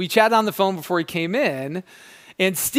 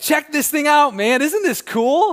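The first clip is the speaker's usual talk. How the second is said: confident, eager, high-pitched, excited voice; 7 semitones higher, 4 dB louder than usual. Retelling how a seller showed off a faucet: imitating confident excited pitch. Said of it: "with a lot of confidence and excitement".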